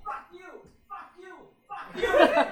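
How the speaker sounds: acted-out very high, pissed-off, furious screaming. Retelling how mom screamed at the driver who rear-ended you, imitating mom screaming. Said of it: "She started screaming at this driver".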